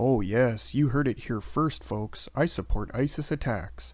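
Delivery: plain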